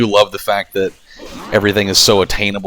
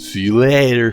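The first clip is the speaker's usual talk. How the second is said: dopey, goofy, cartoonish put-on voice; 3 semitones higher than usual. Demonstrating the voice used every time somebody leaves: goofy voice. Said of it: "I always kind of do that goofy ass".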